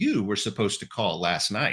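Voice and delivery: mock blunt, brash, choppy stop-start delivery. Retelling answering a phone call from her: imitating own brash, jerky tone. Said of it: "in brash, jerky fashion".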